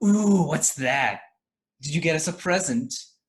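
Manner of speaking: suddenly perky. Acting a scene, a lady on a lobby couch perks up at a present: perked up. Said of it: "she like perks up on the couch".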